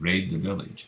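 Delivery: ordinary delivery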